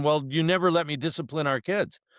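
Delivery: mock screaming. Retelling how the children's mother screamed at them, imitating someone screaming. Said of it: "She's screaming at me saying".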